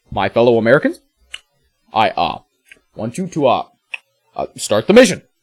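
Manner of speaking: halting, hesitant delivery full of uhs. Reading out a mission briefing, then doing an Obama impression.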